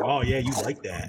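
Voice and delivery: put-on, imitated heavy breathing voice. Retelling what one boyfriend said: imitating a heavy breather. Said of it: "a heavy breather?".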